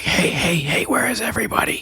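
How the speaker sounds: half-whispered call projected outward. Voicing a character calling to the others below: whispered call. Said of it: "Dick's gonna kinda whisper call out".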